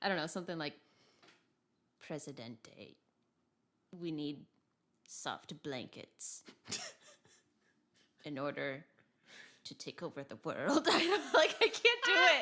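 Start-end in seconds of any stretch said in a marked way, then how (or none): 2.0-10.9 put-on drawled, slow Russian accent like an old lady. Speaker tries voicing Cermet while channeling a Russian old lady; Cermet as Russian old lady. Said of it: "channel my like Russian old lady vibes".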